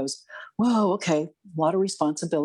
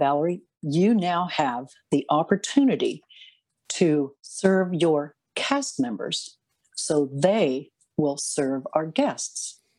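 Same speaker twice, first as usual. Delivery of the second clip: slow, carefully measured, precise, exact delivery. Retelling what he said to the speaker on Main Street: imitating someone speaking precisely and slowly. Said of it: "He said it very precisely, very slowly".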